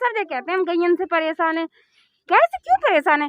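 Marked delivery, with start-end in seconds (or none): none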